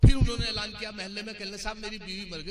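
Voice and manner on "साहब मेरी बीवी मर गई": normal talking voice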